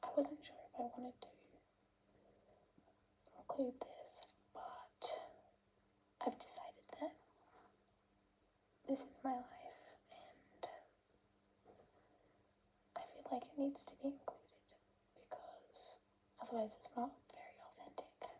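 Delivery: quiet, soft, hushed voice. Giving a video update while sitting near other people, talking quietly. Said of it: "I'm talking quietly because there are other people".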